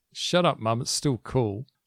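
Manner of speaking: ordinary talk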